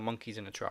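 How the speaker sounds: ordinary talk, nothing marked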